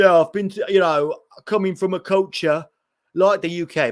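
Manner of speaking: bad, fake, put-on British accent. Retelling a man's interview outside the stadium: terrible British accent. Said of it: "It was a terrible British accent".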